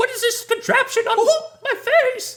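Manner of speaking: very high, very loud squeak. Acting out Mickey waking up in a Saw film: Mickey Mouse voice. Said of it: "Can you imagine Mickey wakes up, he's like".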